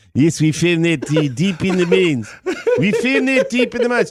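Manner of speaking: put-on South African accent. Joking about a scene from a film: Leonardo DiCaprio's South African accent. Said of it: "with his South African accent and go".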